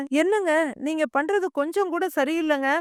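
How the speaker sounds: ordinary delivery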